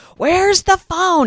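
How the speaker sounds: very high-pitched, loud, frantic scream. Telling a story about pulling the car over, retelling a scream. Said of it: "I'm kind of screaming".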